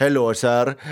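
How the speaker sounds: put-on Indian accent.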